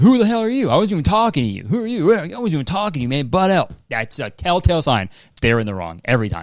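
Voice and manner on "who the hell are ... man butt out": mock hostile, indignant, pitched-up angry outburst. Imitating someone in the wrong lashing out at a bystander: imitating someone lashing out. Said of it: "looking to lash out".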